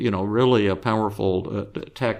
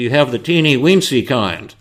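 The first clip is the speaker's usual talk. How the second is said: real loud voice, thrown to carry across room; 3 semitones higher, 6 dB louder than usual. Retelling the psychologist's question to the supplier, in a real loud voice. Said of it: "in a real loud voice".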